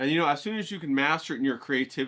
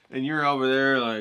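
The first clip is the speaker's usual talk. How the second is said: normal talking voice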